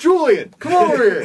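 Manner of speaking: very high, loud, carrying yell.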